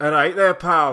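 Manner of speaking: put-on Scottish Glaswegian accent. Taking turns doing British accents, number three, Glaswegian accent.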